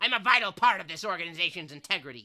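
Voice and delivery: booming, very loud put-on character voice. Voicing a character met in the story, doing his voice. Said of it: "I'm not even gonna do his voice again. Of course I am".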